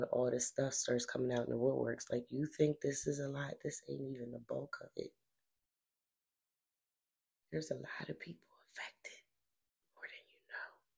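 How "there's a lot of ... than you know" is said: unvoiced, hushed whisper under the breath. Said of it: "I don't know why I'm whispering".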